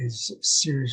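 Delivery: normal talking voice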